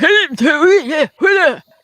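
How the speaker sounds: put-on Scottish accent, loud, slow, drawn out. Retelling what a man in a Scotland restaurant said: imitating a Scottish accent. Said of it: "in Scotland, and this man came up and went".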